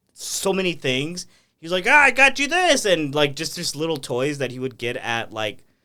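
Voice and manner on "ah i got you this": very high, loud squealing delivery. Retelling a talk-show guest bit in Pee Wee Herman's voice. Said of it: "I could listen to you do that impression all day".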